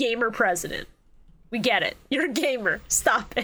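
ordinary talk

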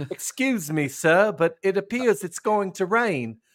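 slow, high, drawn-out put-on British accent. Acting out a Southern commander on the battlefield: put-on British accent. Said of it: "is that British?".

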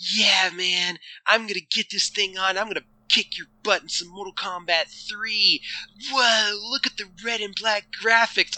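put-on high, cheesy nineties commercial kid voice. Imitating a kid in a cheesy game commercial: imitating a nineties kid. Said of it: "nine-year-old kid in his collared purple shirt looking fly for a nineties kid".

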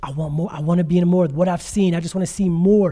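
mock crying, tearful voice. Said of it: "He couldn't stop crying".

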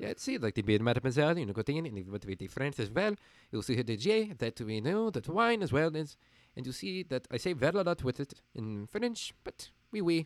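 English words in a light, put-on French accent. Demonstrating adding an accent during a talk about voice work: French accent. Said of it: "It was a little bit of French accent".

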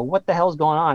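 plain

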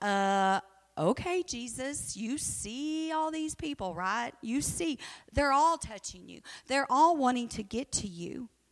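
put-on heavy sarcasm, mock-patient tone. Acting out Peter in The Chosen answering Jesus: sarcastic Peter voice. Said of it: "I hope Peter has this much sarcasm".

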